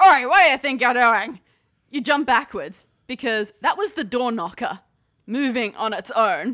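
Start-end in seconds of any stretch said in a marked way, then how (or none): 0.0-1.4 gruff, very loud, fast bellow. Game master voicing a talking door knocker at the big oak door; gruff bellowing Doric Oakendoor voice. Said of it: "a gruff voice bellows".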